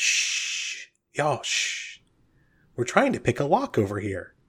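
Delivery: slow, soft shushing sound. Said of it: "Bob turns around real quick and goes".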